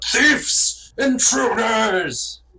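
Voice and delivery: bellowing dragon voice. Narrating a game scene as the dragon, dragon bellowing. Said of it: "the dragon bellows out".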